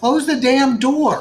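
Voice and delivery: very high, loud, shrill hollered yell. Yelling at a friend back from the bathroom to close the door; yelling. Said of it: "Sorry, I'm yelling".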